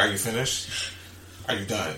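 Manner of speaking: mock cool, calm, nonchalant, soft, unbothered. Retelling own past words to an upset partner: imitating own calm nonchalant tone. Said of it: "if I was calm like that".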